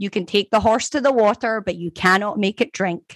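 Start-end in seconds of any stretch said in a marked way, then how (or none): none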